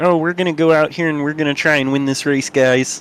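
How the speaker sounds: put-on high cartoon frog puppet voice. Asked for his best Kermit impression before the race restart: Kermit the Frog impression. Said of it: "give us your best Kermit impression".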